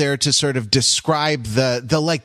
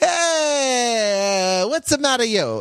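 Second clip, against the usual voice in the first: mock Italian accent, higher pitched; 10 semitones higher than usual. Acting out smokers at a no-smoking bus stop replying: put-on Italian accent. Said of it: "correct Italian accent".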